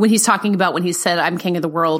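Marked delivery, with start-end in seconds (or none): none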